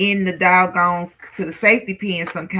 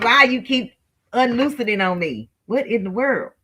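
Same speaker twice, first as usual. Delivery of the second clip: frustrated tone turning to anger; 4 semitones higher than usual. Struggling with something that keeps coming loose: getting mad. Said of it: "But I am getting mad now".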